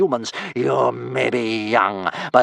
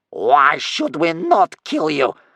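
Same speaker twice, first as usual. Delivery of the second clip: fearsome, dreadful, furious anger; 4 semitones higher than usual. Reading a story, a grandmother answers a Viking's plea for mercy, in a dreadful angry voice. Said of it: "in a dreadful angry voice".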